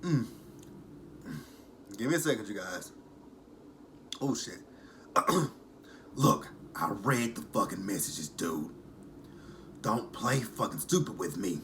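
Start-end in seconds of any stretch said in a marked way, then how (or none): 6.1-11.6 smoker's voice, angry. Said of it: "I hate doing Angela's voice".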